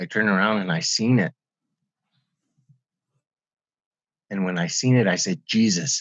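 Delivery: choked-up voice, choking with emotion. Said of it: "this still chokes me up".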